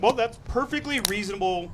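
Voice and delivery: plain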